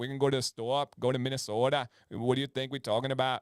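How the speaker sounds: Yooper accent with rolled-off word endings. Showing how Upper Peninsula people talk: Canadian-esque Upper Peninsula accent. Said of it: "they have a very Canadian-esque accent".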